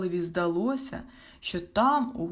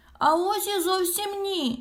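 very high, slow, defensive tone; 13 semitones higher than usual. Called gullible by a friend, the troll denies it: defensive protest. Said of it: "боронився Мумі-троль".

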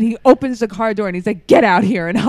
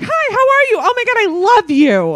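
high, little cartoon mouse voice; 13 semitones higher, 4 dB louder than usual. Imitating Tracy's brother, who talks like Mickey Mouse: Mickey Mouse voice. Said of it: "a Mickey Mouse voice".

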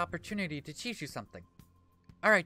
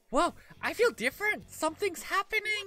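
put-on pixie voice, much higher; 13 semitones higher, 4 dB louder than usual. Playing a pixie character, in a high pixie voice. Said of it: "Trying to do a high voice like that's really hurt".

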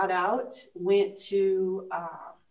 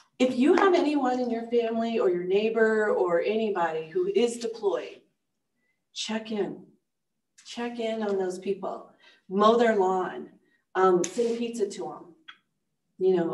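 voice catching, choked-up, emotional, pleading; 2 semitones higher than usual. A wife and mother of multiple deployments speaks publicly, getting choked up. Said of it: "I get choked up".

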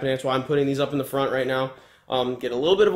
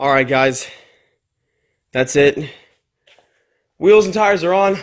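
winded, breathless, loud talking; 8 dB louder than usual. Wrapping up a video after putting the wheels and tires on, out of breath. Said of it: "why am I out of breath?".

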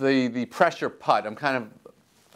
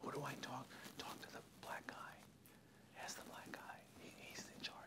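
very quiet, hushed, breathy whisper; 30 dB quieter than usual. Imitating people asking who is in charge: imitating people whispering. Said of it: "they wanna whisper that".

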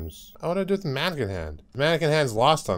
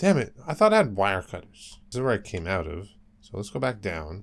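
ordinary delivery

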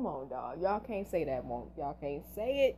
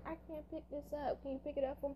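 acted weak, soft, high, helpless little voice; 10 semitones higher, 7 dB quieter than usual. Showing how Allison plays submissive: imitating Allison as a helpless cute girl. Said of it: "she plays like".

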